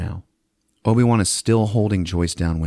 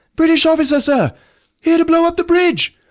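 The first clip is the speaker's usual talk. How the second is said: shrill, very high, loud yelling; 6 dB louder than usual. Retelling a story, the speaker acts out Joyce yelling at the colonel: retelling Joyce's yell. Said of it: "Joyce starts yelling at him".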